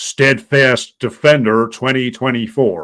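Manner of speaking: loud, slow, deliberately drawn-out put-on American accent. Pronouncing a highlighted name the way it always must be: mock American accent. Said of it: "you always have to pronounce in a mock American accent".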